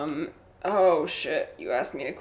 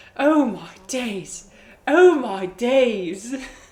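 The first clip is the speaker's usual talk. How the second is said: loud, high, silly put-on British accent; 7 semitones higher, 8 dB louder than usual. Announcing their accent popping up, then doing a british watermelon alien accent. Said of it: "British watermelon alien accent popping up".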